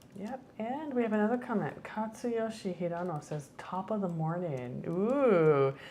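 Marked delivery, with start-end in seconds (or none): none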